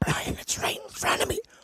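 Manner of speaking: very quiet, breathy, hushed whisper, barely voiced. Retelling whispering to a partner that the animal is close: whispering. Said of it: "I try to whisper".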